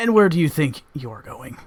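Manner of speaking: condescending, haughty regal creature voice. Voicing a regal creature stepping through a rift: condescending regal creature. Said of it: "sort of almost in a very condescending way".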